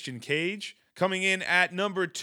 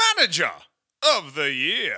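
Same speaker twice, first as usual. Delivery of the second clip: loud, swooping cartoonish pitchman voice; 6 dB louder than usual. A host announcing wrestling awards moves to the next category, in a cartoonish sales-pitch voice. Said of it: "I have no idea what voice I was going for there".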